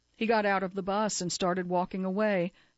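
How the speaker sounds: usual speaking voice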